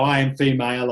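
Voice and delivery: normal talking voice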